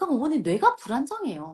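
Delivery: normal talking voice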